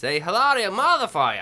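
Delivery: clumsy fake Boston accent. Trying again after a weak first attempt among friends, a bad boston accent. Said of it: "Why is your Boston accent so shitty?".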